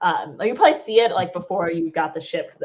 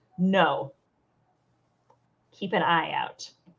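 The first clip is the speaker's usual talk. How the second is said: commanding, authoritative in-charge voice; 4 dB quieter than usual. Narrating the voices heard on board a ship; a more authoritative voice. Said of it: "a more authoritative voice".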